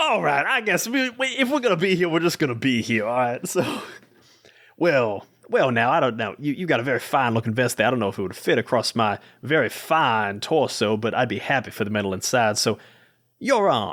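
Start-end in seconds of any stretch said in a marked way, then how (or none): 4.8-13.9 put-on Southern accent with drawl. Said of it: "I immediately go to Southern accent".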